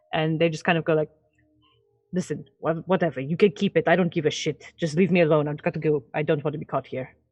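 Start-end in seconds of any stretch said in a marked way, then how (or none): 2.1-7.1 quiet muttered cursing under breath. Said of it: "very quietly and infernal, like, curse under their breath".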